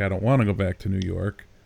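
usual speaking voice

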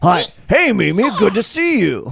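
gruff voice, pitched very high. Storyteller voicing Rusty greeting Mimi, gruff Rusty voice. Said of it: "it was a gruff voice like this".

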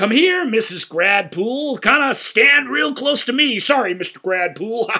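very high, loud, broad clownish tour-guide act. Describing a man making mummy puns to a couple: imitating a broad, clownish man. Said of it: "it's unbelievably broad and clownish".

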